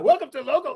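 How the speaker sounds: hurried, too-quick, rattled-off delivery. One speaker mimics the other's intro attempt, mocking a rushed intro. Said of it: "why is your cadence so fast now?".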